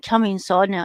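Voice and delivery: ordinary talk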